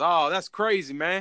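mock Southern drawl. Retelling a strange encounter to a friend, doing an impression of a man responding to a reply; imitating Southern drawl. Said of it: "you got some Boomhauer characters".

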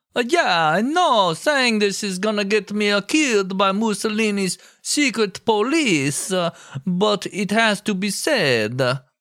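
high, slow mock Italian accent.

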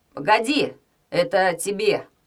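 calling out loudly. Narrator reads Pokrovsky catching up on the beach and calling to Lyuba, shouting. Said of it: "крикнул он Любе".

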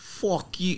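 fake, bad, high-pitched Boston accent.

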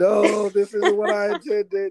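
very high-pitched, shrill screaming. Joking that a dead writer is made to watch the show: imitating H. P. Lovecraft screaming. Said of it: "He's screaming, like".

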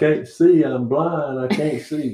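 put-on, high-pitched hollering, voice thrown out. Telling how he got kicked in the chest, imitating him hollering. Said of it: "and he went hollering".

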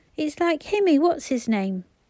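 gasping. A narrator reads Phyllis climbing a hill with Bobby and Peter, gasped. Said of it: "gasped Phyllis".

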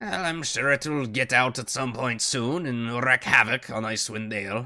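put-on matter-of-fact, scheming, cold, condescending old voice. In a role-play game, answering a question about a dragon as a scheming old dwarf matriarch.

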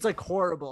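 usual speaking voice

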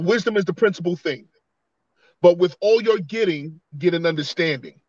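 ordinary talk

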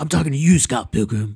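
cocky, hotshot movie-star line delivery. Describing a movie-star character who drops his voice, doing Lucas Lee's dropped deep voice. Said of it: "drops down his voice for everything he says".

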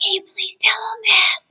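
very high, hushed, pleading whisper. Unable to swallow, asking the person next to her to pass a message, whispering. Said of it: "I'm whispering to the person next to me".

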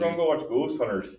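put-on northern Wisconsin accent. Speaker imitates friends from Wisconsin, northern Wisconsin accent. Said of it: "with their northern Wisconsin accent".

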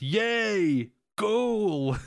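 high-pitched goofy celebratory cheer like a fan. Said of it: "He goes".

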